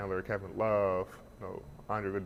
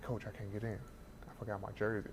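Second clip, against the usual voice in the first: soft, secretive half-whisper; 10 dB quieter than usual. Retelling talking to his coach so others won't know: re-enacting a whisper. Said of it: "I'm kind of whispering to him".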